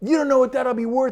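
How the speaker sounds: best-try put-on New Jersey accent. Retelling what another man told him about a stock award, in attempted new jersey accent. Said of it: "I'm trying to do my best New Jersey accent".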